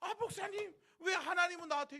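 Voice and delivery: mock very high, very loud tearful crying wail. Imitating a church member complaining to the pastor: imitating someone crying. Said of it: "나중에는 막 울면서".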